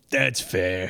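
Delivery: put-on deep, low New Jersey accent. Describing a scene where Pigma walks in smoking a cigarette, Pigma voice. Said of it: "That's a good Pigma voice too".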